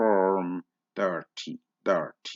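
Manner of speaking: American accent, Rs sounded in "form" and "thirty". Explaining how Americans pronounce the R in Form thirty: American accent, rhotic R. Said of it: "what would the Americans say of Form thirty-four? ... American accent is rhotic ... I am not a very good imitator of Americans".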